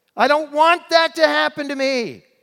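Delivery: shrill, very high, very loud, top-of-the-lungs shout. Recalling learning that everyone dies, retelling a shout at the top of the voice. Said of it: "I shouted at the top of my voice".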